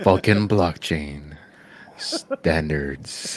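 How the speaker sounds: mock seductive delivery. Repeating how a guy said the phrase: mock-seductive delivery. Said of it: "And he said it like in a seductive way".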